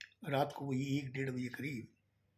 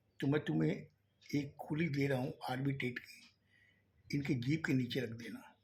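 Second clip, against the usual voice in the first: plain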